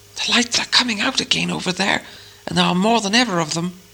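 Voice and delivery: carrying stage whisper. A narrator reads the line of the one on watch, in a loud whisper. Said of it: "said in a loud whisper".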